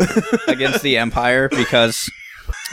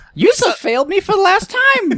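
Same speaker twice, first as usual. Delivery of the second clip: very high-pitched character voice. Trying out Vader lines that Jar Jar could say, Jar Jar Binks voice. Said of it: "lines from the Star Wars movies that Jar Jar could say".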